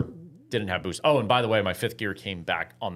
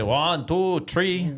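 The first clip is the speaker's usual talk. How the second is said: terrible, bad put-on Irish accent; 9 semitones higher, 3 dB louder than usual. Joking about how irish people count: terrible irish accent. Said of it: "That's a terrible Irish accent".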